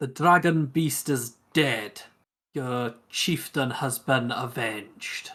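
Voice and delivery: loud shouting in Orcish.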